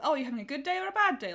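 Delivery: put-on slightly condescending, high, quick kid-friendly voice. Discussing a scene where Lex sits down with Hannah, mimicking Lex, kid-friendly, condescending. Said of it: "in a very like kid-friendly, slightly condescending voice".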